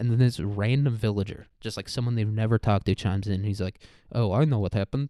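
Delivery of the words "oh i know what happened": put-on speaking with a Swedish accent. Speaker recounts a random villager chiming in at a dinner feast, swedish accent. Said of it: "he's got like a Swedish accent".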